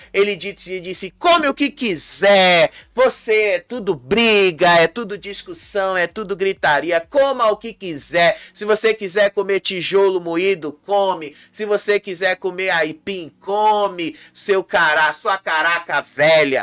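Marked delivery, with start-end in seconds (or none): none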